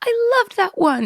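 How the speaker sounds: play-acted, very high, delighted gushing praise. Imitating Carol Craft giving praise with a huge smile: imitating Carol Craft, delighted. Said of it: "like she's delighted".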